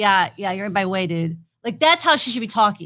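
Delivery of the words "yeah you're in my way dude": dismissive, low goth voice full of attitude. Speaker showing how a character in that outfit should talk, goth voice with attitude. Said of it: "her voice should be more like goth, like attitude".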